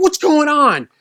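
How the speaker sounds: very high-pitched, loud, alarmed, panicked outburst. Retelling how dad reacted on pulling up: imitating dad freaking out. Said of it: "he's freaking out".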